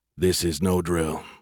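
ordinary delivery

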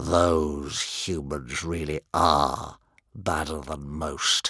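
very low, soft, quiet hiss. Reading a story, the narrator voices One Eye the Sabretooth, hissing. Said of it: "he hissed".

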